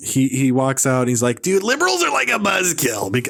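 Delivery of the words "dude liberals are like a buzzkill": whiny voice with big, swooping pitch swings. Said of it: "I can't even do the accent".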